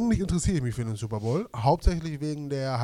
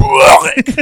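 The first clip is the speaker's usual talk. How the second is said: "börek" voiced as a retch; 10 semitones higher, 14 dB louder than usual. Demonstrating how the word Börek sounds like throwing up: retching sound on Börek. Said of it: "Die Geräusche von Börek, ne? So Börek!".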